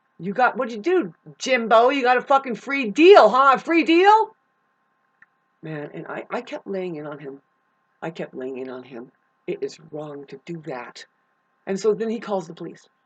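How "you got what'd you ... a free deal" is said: acted-out, put-on yelling. Recounting a past argument, retelling his own yelling. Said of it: "I yelled at him and said".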